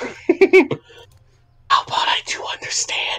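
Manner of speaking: very slow, drawn-out fake stage whisper. Playing a game with others, teasing them: fake whispering. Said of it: "Or stop fake whispering".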